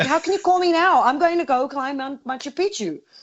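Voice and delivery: irritated, put-out tone. Retelling a phone call from CBS: retelling own annoyed words. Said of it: "almost pissed off at this chick".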